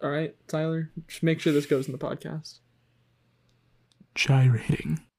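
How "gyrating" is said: said very close to the microphone. Leaning in close to the mic to say one word: said close to the mic. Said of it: "I'm gonna get real close to the mic for this".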